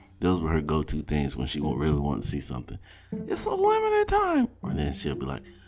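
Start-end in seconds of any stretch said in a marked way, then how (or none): 3.1-4.5 put-on very high, slow, kid-like ad-announcer commercial voice. Speaker imitates their young daughter wanting to see a movie: imitating child's commercial-announcer voice. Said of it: "sounded like a walking damn commercial".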